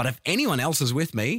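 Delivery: ordinary delivery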